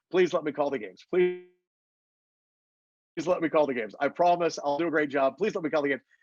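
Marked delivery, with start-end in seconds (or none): none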